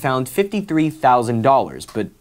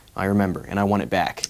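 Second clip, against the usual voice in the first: normal talking voice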